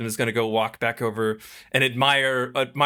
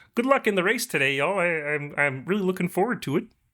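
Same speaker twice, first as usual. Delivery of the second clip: high, cheery, jolly frog-puppet voice; 6 semitones higher than usual. Wishing everyone luck before the race, in a Kermit the Frog voice. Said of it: "can't be mad at somebody with a Kermit voice".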